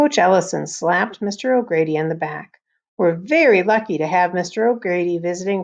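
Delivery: ordinary delivery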